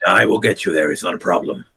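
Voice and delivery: low, gritty, gravelly rasping voice. In an acted scene, speaking to a companion, in a gravelly voice. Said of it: "moves so gravelly".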